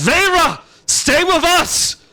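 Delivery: very high, high-pitched yell. Narrating a scene where Nagoya calls to Vera as she runs, yelling out. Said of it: "Nagoya yells out".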